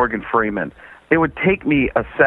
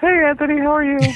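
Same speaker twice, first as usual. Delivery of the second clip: put-on girly voice, very high. Comedian greeting a radio host on the phone, in a generic girl voice. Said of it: "a generic girl voice".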